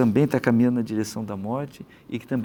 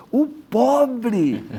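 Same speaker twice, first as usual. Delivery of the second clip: put-on very high, eager, enthusiastic child's shout; 12 semitones higher, 4 dB louder than usual. Retelling a child's answer to a sermon question in church, imitating an excited shout. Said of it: "respondeu com entusiasmo, assim, gritando".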